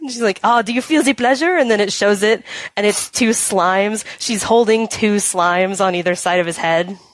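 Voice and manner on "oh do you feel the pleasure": fake French accent, higher. Retelling a game scene, voicing the girl at the parlor: put-on French accent. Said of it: "the French accent thing going on".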